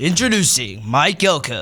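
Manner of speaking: loud, booming, big announcer-man voice. Show host introduces the coach, in his best announcer man voice. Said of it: "with your best announcer man voice".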